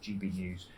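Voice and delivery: very quiet, hushed, joking aside. Listing the outlets where commentary is given, jokingly said very quietly. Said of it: "I'll say this very quietly".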